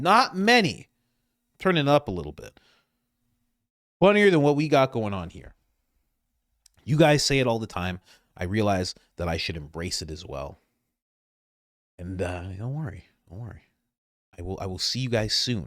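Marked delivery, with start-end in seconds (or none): 0.0-5.5 volume turned up, loud and high. Speaker announces he will say it at volume, then does: louder voice. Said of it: "I'm going to say it in a volume in my voice".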